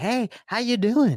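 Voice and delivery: friendly, high, attention-grabbing phone voice. Showing how a caller's greeting sounds on the phone: imitating Nathan's phone tonality. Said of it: "He doesn't talk like that in real life where he's like".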